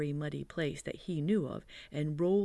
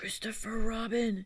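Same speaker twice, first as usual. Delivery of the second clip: high, loud stage whisper; 7 semitones higher than usual. Narrator reading a character calling down from near the honey, loud whisper. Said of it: "he said in a loud whisper".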